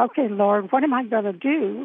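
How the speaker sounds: ordinary talk, nothing marked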